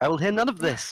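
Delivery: loud, high, sassy put-on woman's voice.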